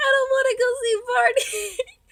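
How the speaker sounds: put-on shrill, loud screaming little child. Retelling running from Barney at age three, imitating a screaming child. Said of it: "and I'm screaming".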